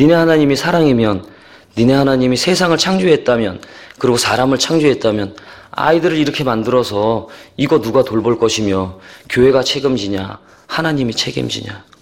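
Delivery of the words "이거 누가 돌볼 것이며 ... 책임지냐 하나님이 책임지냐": ordinary talk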